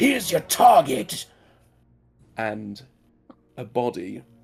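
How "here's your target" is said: shouting, much louder and higher. Running a game, the speaker voices a character who lifts the player up: shouting. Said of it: "and shouts".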